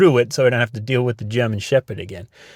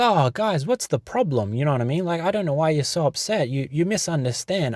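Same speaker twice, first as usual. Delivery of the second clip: mock slick, cunning tone, higher and quieter; 5 semitones higher, 5 dB quieter than usual. Retelling how the manager answered, imitating someone playing it cool. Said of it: "playing it so cool. He was, like, so slick".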